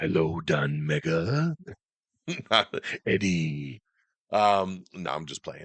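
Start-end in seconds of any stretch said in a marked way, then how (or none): 0.0-3.8 very slow, drawn-out monster voice. Letting the symbiote do the talking: Venom voice. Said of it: "let my symbiote do the talking for me".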